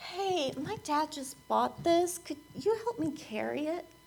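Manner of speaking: timid high voice. Retelling asking burly guys to help carry his dad's purchase, retelling own raised voice. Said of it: "my voice goes up".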